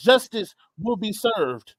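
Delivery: ordinary delivery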